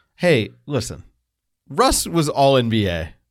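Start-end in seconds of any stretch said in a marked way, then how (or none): 1.7-3.1 slow, words breaking up with laughter. Making a claim about a player: laughing while talking. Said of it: "I can't even say that without laughing".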